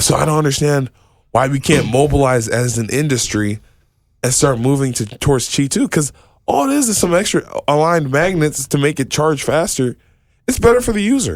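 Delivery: worked-up exasperated voice. Complaining that the industry won't move to Qi two: getting upset. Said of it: "I'm sorry, I'm getting upset".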